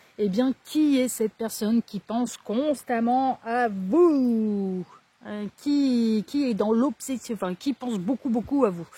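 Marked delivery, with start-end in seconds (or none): 0.2-4.9 slow, careful, unhurried delivery. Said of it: "pardon, je parle trop vite".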